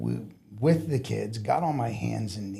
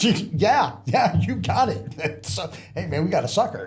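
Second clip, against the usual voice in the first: loud, high, mocking jeering laughter; 8 semitones higher, 7 dB louder than usual. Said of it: "both shift supervisors start laughing at me".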